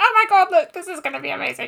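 tiny, high-pitched little goose voice. Retelling what they said to their partner when sending a video, little goose voice. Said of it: "in my little goose voice".

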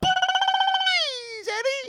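high, loud cartoon rabbit voice. Showing someone unfamiliar with the character how he pleads with Eddie, Roger Rabbit impression. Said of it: "He goes".

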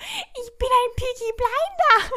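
very high, very slow, drawn-out mocking voice. Retelling how commenters mocked a guy's outfit, in a mocking imitation of him. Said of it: "Hat den so nachgeäfft".

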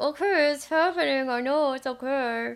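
strained, clenched-teeth voice. Speaker acting out a hard moment, mock through gritted teeth. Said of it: "through gritted teeth".

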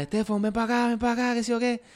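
very high-pitched, frantic, panicked yelling. Retelling seeing a fin in the water and calling to a brother, retelling own panicked yell. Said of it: "y le empecé a gritar".

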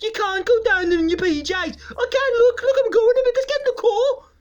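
put-on terrible Birmingham accent. Speaker acts out people deciding to go out in their pjs, in a terrible birmingham accent. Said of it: "That was a terrible accent".

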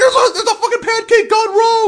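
very high, loud laughing yell.

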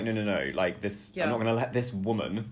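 ordinary talk, nothing marked

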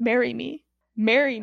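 ordinary talk

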